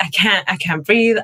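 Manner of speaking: ordinary talk, nothing marked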